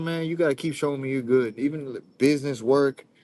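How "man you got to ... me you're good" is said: usual speaking voice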